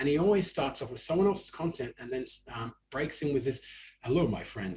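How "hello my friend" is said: deep, low-pitched voice. Imitating how a TikTok creator opens his videos: imitating a really deep voice. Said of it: "in this really deep, amazing voice".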